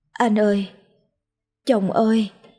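whimpering moan. Narrator reads a woman calling out to her husband, moaning. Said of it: "nhưng miệng lại rên rỉ".

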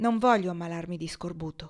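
ordinary delivery

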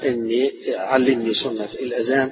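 ordinary talk, nothing marked

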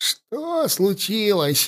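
soft, hoarse, rasping, croaking wheeze. A nobleman, just dragged from the water and coughing, asks what happened: hoarse wheeze. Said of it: "прохрипел он".

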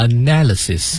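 analysis with stress on second syllable -na-. Teaching pronunciation from an IELTS listening test: stress on na in analysis. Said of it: "analysis 它放在第二个音节，放在na 上面了".

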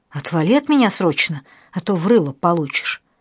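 ordinary delivery

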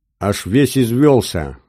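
joking, teasing, playfully mocking tone. Trautman answers Esmeralda's mocking question, teasing, matching her tone. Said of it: "в тон ей ответил Траутман".

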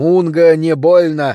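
loud, growled monster voice. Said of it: "прорычал я".

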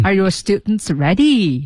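slow, "ready" drops in an odd falling tone.

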